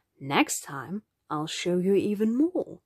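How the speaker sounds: ordinary delivery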